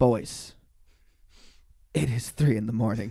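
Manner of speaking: very deep, very low disappointed tone. Retelling how she reacted to the boys' late-night music, in a mock-disappointed deep tone. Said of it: "that deep disappointed tone".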